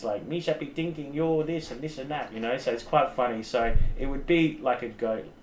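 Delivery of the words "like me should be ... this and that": fast, goofy alien creature voice, rattled off. Describing how a talking dragon creature would speak, in a Jar Jar Binks voice. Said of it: "kind of talk like in maybe like Jar Jar Binks".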